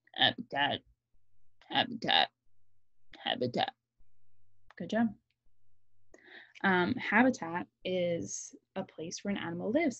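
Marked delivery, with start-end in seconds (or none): 0.2-3.7 frog voice, dropped very low. Leading a group to repeat a new word, in a frog voice. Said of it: "Say it like a frog".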